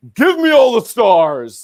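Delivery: butch voice, loud and high. As Rachel, who has just won in the episode, call out in Rachel's butch voice. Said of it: "she gets some like butch voice going on".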